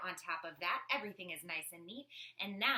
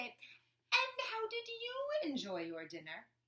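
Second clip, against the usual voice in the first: very high, grand, drawn-out, honored-sounding voice. Showing listeners how to address invited guests at a meal: important, high, honored voice. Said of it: "In your most important, high, and honored voice".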